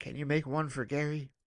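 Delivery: soft-spoken voice. Speaker retells a woman quietly asking another woman a question: imitating a soft voice. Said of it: "very softly goes".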